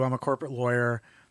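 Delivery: plain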